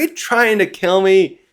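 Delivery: toned-down, mild half-yell. Retelling a manga panel, chained-down Loki yells at Luffy: acting out Loki yelling. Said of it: "Loki yelling out".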